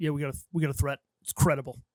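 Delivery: fake Brooklyn accent. Describing an actor's security guard role in Cosmopolis: Kevin Durand Brooklyn accent impression. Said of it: "unnecessary Brooklyn accent".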